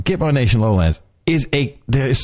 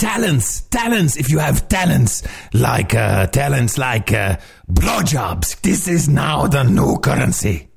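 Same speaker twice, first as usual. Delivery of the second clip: put-on comic dog puppet voice. Mocking a claim about talent as currency: Triumph the Insult Comic Dog voice. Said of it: "You sound like Triumph, the, uh, insult comic dog now".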